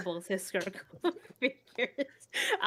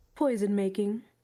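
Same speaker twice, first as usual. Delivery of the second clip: intimidating, menacing tone; 3 dB louder than usual. Naming a hobby when asked what it is: intimidating delivery. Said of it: "you made it sound very intimidating just now".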